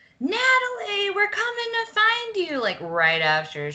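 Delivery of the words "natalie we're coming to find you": very high, carrying screamed voice. Retelling what mom did in the airport: imitating mom screaming. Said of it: "my mom screamed".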